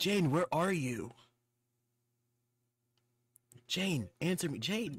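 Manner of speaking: deliberately terrible, high-pitched, over-the-top bad acting. Voicing a game character calling out for someone: deliberately bad voice acting. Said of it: "I'm gonna do my worst voice acting".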